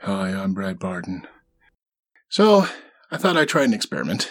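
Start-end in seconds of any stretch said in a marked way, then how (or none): 0.0-1.3 slow, dull, flat, lifeless monotone. Showing how a recorded self-introduction comes out: flat monotone. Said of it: "I just sort of end up in this monotone".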